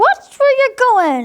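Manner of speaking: tiny, very high little voice. Lawrence walks into a spider's web, and the spider speaks in a small voice. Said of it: "a small voice said".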